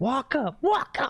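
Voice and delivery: very high-pitched, frantic freakout yelling.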